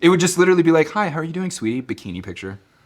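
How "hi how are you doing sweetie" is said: put-on British accent, flirty and sassy. Retelling messages from a chatbot set up as a sassy British secretary: imitating a sassy flirty British secretary. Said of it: "a sassy British secretary, but it was also flirty".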